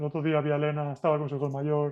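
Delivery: speaking too fast, rattled off.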